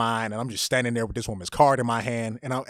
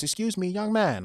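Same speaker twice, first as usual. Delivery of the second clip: put-on Chinese accent, elderly woman voice, pitched up; 8 semitones higher than usual.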